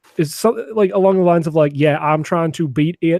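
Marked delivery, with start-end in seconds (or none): 1.8-3.2 slow, deep put-on heavy southern drawl. Imitating one guy from a podcast he stopped listening to: imitating a deep Southern drawl. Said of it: "the deepest Southern drawl I've ever heard".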